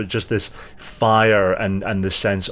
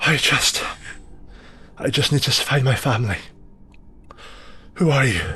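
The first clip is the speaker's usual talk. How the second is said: intense trembling, shivering voice, much higher; 4 semitones higher than usual. Shivering intensely, she leans against you and speaks: shivering intensely. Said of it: ""I just want my daughter." And she kind of like slumps forward, and as she slumps forward, you see the hair seems to kind of almost like flow like liquid back over her skin, rippling away, and just a".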